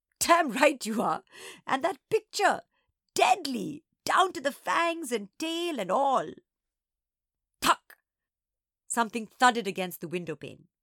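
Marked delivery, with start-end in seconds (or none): 0.2-6.3 high words spluttered out between laughs. Reading a story, an old woman speaks while laughing: sputtering with laughter. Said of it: "B sputtered and shook".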